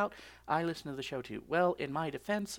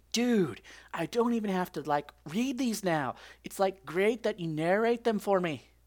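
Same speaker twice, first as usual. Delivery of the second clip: slipping into a put-on Scottish accent; 3 semitones higher, 4 dB louder than usual. Speaker reading a new commenter's message aloud, in a Scottish accent. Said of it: "I don't know why I went all Scottish there".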